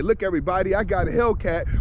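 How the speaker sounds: normal talking voice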